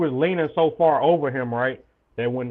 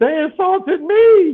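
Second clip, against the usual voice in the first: very high, very loud, shrill screech; 9 dB louder than usual. Retelling how he started screaming over an insult, imitating someone screaming. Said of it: "He started screaming like a".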